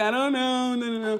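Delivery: mock words broken up by sobbing. Retelling being asked what was wrong: retelling own sobbing speech. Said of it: "in between my sobs".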